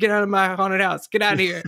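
scary, mildly menacing tough-guy telling-off tone. Imagining The Rock dressed as a Tooth Fairy: The Rock yelling. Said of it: "Him yelling at you might be kinda scary".

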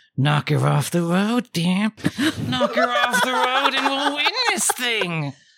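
put-on sinister sweet childlike whisper. Narrating a game scene, a voice whispers in the player's ear: sinister sweet childlike whisper. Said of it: "a sinister but sweet childlike voice whispering in your ears".

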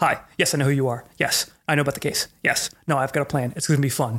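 authoritative, fully in-control, commanding phone voice. Retelling how the attorney answered the phone: imitating a commanding, booming voice. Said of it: "commanding, booming voice".

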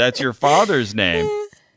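put-on exasperated voice. Retelling a psychic's reply to a woman: imitating an exasperated John Edwards. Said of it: "kind of, like, exasperated".

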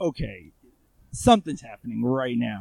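ordinary talk

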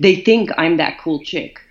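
ordinary talk, nothing marked

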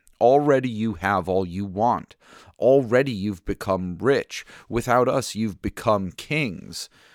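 ordinary delivery

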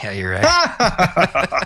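high, slow speech while laughing. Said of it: "You're like".

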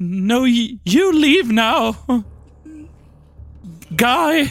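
shaky, trembling, frightened voice. Playing a character making a threat in a tabletop game: shaky, scared voice. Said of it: "I'm gonna say it in a very shaky, scared voice".

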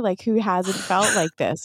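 plain

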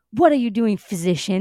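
put-on rude, condescending tone. Quoting Uther speaking to Gaius: rude Uther voice. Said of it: "Stop being rude".

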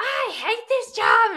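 very loud, very high exasperated, frustrated outburst. Retelling a phone call complaining about the job: imitating own frustrated complaint. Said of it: "I was just frustrated".

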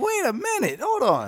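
high, incredulous, disbelieving reaction.

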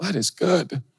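put-on tearful voice. Retelling watching a clip of his own sermon: imitating tearing up. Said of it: "I start tearing up".

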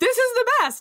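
put-on delighted voice. Imitating the other speaker talking about their free days: imitating someone sounding delighted. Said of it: "can hear it in your voice when you're like".

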